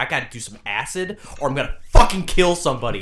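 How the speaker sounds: very loud, agitated, wound-up, on-edge outburst. Acting out a friend who needs acid: imitating Gideon on edge. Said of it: "fucking on edge".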